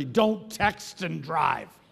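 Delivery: severe, firm tone. A speaker tells the audience to turn to someone and say it sternly. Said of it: "Turn to somebody and say sternly".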